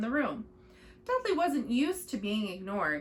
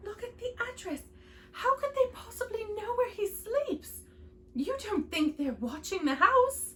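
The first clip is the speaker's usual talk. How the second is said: very high, quivering, trembling, frightened voice; 10 semitones higher than usual. Narrator reading Aunt Petunia's questions to Uncle Vernon, in a quivering voice. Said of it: "Aunt Petunia was saying in a quivering voice".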